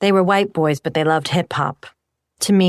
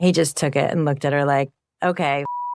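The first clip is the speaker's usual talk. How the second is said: ordinary delivery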